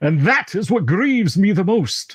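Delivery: hammed-up, swooping cartoon vampire voice. Game master voicing a character grieving his killed snake, Count Chocula voice. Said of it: "Why do you sound like Count Chocula now?".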